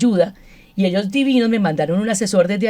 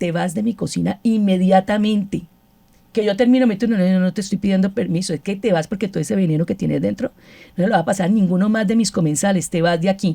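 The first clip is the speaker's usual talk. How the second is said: normal talking voice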